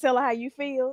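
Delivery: sugary, sweet, coaxing voice. Describing a video reel, retelling a girl coaching a guy, in put-on sweet voice. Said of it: "she says it in her like sweet voice".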